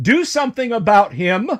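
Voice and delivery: high, yelled hobgoblin voice. Storyteller voices Circumference yelling from the back: Circumference's hobgoblin voice. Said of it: "I know that hobgoblin voice".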